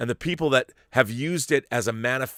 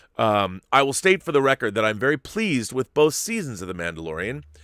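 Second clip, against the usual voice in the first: ordinary talk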